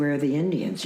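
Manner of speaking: ordinary delivery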